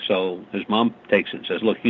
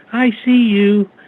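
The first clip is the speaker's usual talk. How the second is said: put-on very high, raised, cutesy little-girl voice; 13 semitones higher, 6 dB louder than usual. Act out what the recorder from the basement played back, in a cute little girl's voice. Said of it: "it says it in a little girl's voice, you know, a really cutie little thing".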